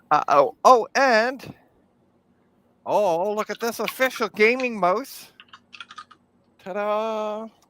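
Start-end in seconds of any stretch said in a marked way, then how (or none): 3.3-7.4 dripping sarcasm, fake showman enthusiasm, stretched "ta-da". Showing an old wired mouse pulled from a bag: sarcastic. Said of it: "Yes, I'm being sarcastic".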